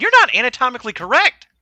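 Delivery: put-on high, loud small-child piping voice. Voicing a kid who runs up to a player: voicing a kid. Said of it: "Lucky looks up and goes".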